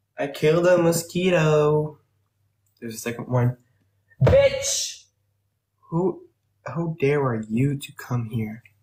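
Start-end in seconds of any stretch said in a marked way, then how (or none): 4.2-8.6 sassy, mean tone. Scolding a second mosquito that just showed up: sassy. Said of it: "I'm in a sassy mood right now".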